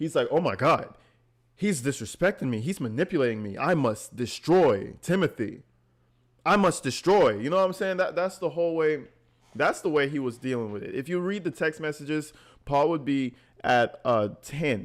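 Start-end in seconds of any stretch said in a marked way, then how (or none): 0.3-7.4 put-on flustered, frantic, dumb caveman voice in rage. Retelling how Paul reacted when told he was manipulated: imitating Paul in overdrive caveman mode. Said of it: "he goes into overdrive caveman mode".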